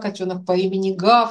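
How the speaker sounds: ordinary talk, nothing marked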